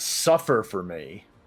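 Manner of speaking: loud, yelled battle-cry delivery. Voicing a foe reacting after being hit: yelling. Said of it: "as she yells".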